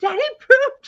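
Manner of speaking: put-on very high, loud, shrieking toddler scream. Retelling how a little girl screamed at her daddy, imitating a child screaming. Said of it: "just screaming, like".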